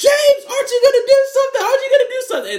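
put-on very high, shrill, rushed screaming. Recounting a movie scene where a car is shot at; retelling a scream. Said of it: "she's screaming like".

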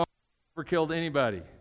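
ordinary delivery

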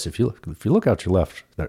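bad, sloppy airline pilot announcement voice. Showing how pilots talk: bad Chuck Yeager impression. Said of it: "it's a Chuck Yeager impression".

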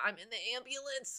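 acted feeble, soft, weak sickly voice. Imagining a dreaded call from a woman in an ambulance, imitating a weak sick voice. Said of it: "That's my sick you voice when you're sick".

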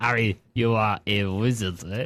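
put-on French accent. Imagining what Hagrid would sound like if he were French, French Hagrid voice. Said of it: "I wonder what would happen if Hagrid was French".

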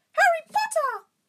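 very high, loud, squeaky creature voice. A bowing creature greets Harry by name, in Dobby's high-pitched voice. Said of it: "said the creature in such a high-pitched voice".

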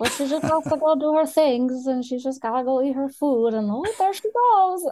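high put-on dog voice. Asked whether she gives her dog a voice, she shows it: voicing her dog. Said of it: "she's always talking like this".

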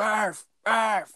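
shrill, very high screamed yell. Speaker retells screaming at a man on the field after the game, re-enacted screaming. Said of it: "And I'm like screaming at him".

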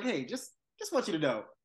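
fake-nice, sugary sweetness. Retelling how a woman threw shade, quoting her in a mock-sweet tone. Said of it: "the sweetest tone and the sweetest smile".

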